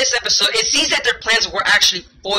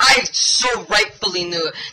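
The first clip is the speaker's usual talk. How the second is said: usual speaking voice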